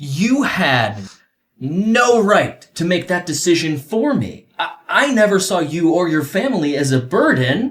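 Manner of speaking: very high, angry outburst. Replying to someone who made a decision for him, angry. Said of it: "I'm sorry I'm so angry".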